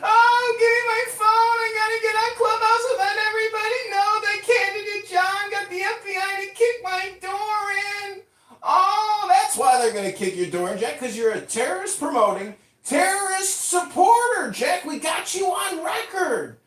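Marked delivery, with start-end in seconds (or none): 0.0-8.2 high, frantic, wailing mock scream. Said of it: "you're screaming".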